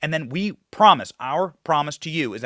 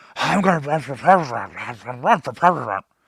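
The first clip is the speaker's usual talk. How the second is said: politician voice, as if spoken through a bushy mustache. Joking about a news story: John Bolton impression. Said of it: "my best impression of John Bolton".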